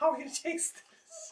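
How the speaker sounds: voice shooting up two octaves, very high laughing squeak.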